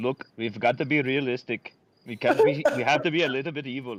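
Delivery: put-on Indian accent. Joking about the company dropping its motto, imitating the CEO in an Indian accent. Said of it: "the Indian voice was on point".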